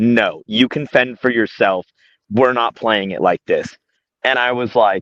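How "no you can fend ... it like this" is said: ordinary talk, nothing marked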